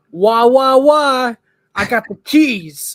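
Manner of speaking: loud yell.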